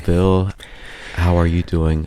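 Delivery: softest possible, slowed-right-down voice. Practicing a slow-talking bit, greeting the other speaker, very soft, slow voice. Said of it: "we'll talk in the like our the most soft tone like this".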